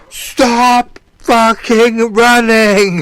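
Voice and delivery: shrill, very loud, high-pitched bellowing yell. Retelling what a fighter yelled at his opponent during the match: imitating someone yelling. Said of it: "Hakeem kept yelling".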